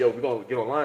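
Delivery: ordinary delivery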